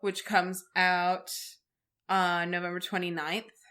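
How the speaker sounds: long dramatic pause. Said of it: "She was pausing dramatically".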